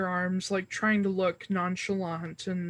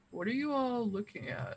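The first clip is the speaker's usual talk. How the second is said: big, furry creature voice; 3 semitones higher, 7 dB quieter than usual. Voicing a big furry furbolg poking its head out: voicing the furbolg. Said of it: "He's like".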